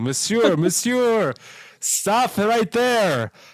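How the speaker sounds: snobby upscale waiter voice, high-pitched and loud. Speaker imagining a man stopping him at a five-star restaurant, snobby upscale waiter voice. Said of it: "a fancy upscale five star snobby restaurant with a guy with a pencil thin mustache going".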